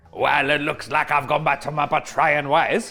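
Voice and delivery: put-on French accent. Confessing to betraying others again, in a put-on french accent. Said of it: "brought on my French accent for this".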